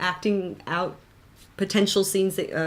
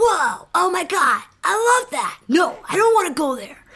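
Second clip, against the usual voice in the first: put-on loud, high-pitched skater-kid voice; 10 semitones higher, 6 dB louder than usual. Asked to do some of their characters, speaker performs Jamie: Jamie skater-boy voice. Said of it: "a skater boy".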